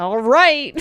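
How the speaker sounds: very begrudging, high, loud drawl.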